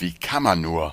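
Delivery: ordinary delivery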